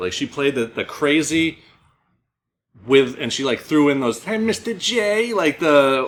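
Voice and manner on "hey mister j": put-on very high-pitched voice, trashy New Jersey accent. Describing Harley Quinn's lines in a movie: Harley Quinn accent. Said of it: "the accent kinda shit".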